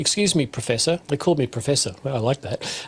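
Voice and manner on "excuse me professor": put-on polite, confused voice. Retelling an engineer's question in a break: imitating a polite, confused voice. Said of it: "in a rather polite and almost confused voice".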